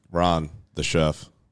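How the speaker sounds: low, slow, bone-dry delivery. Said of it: "That was dry as hell".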